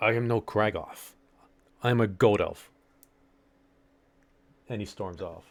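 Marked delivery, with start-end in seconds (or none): 0.0-2.7 very slow, deliberate, angry snap. As game master, voicing a character who snaps at the player. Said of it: "he snaps at you".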